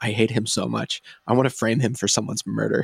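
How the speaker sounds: put-on whisper. Retelling a movie character's line about the director: imitating a whisper. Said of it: "he just leans over and whispers".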